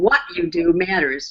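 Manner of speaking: "what" stressed, pitch falling. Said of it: "we can emphasize different words".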